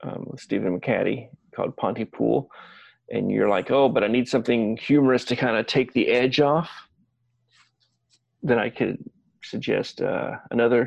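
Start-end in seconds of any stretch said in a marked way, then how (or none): none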